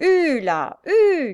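high, loud coachman-style calling cry. A coachman calls to his horses as the carriage nears the inn, crying out. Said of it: "cria le cocher".

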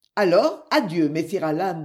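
ordinary delivery, nothing marked

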